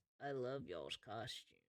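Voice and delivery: muttered under the breath. Voicing the king as he puts crowns on heads: under his breath. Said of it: "under his breath".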